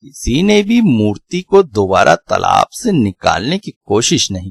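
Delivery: plain reading voice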